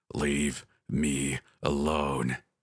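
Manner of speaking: low, fiendish creature howling. Reading a story, the narrator voices the creature in a struggle: fiendish howl. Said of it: "the creature howled in a fiendish voice".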